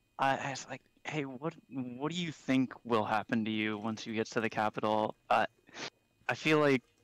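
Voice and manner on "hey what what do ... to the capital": quiet put-on whisper, lower and quieter. Asking a captive in the cart a question so others won't hear: whispering in character. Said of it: "I try to whisper this".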